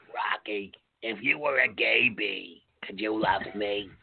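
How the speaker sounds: low, deep, dropped character voice. Riffing on an SNL sketch, Harvey Fierstein voice. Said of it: "[name] just channeled ... Harvey Fierstein group".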